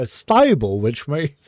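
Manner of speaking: mocking, put-on British accent. Mocking a game character's line: mocking a British accent. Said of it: "make fun of that accent".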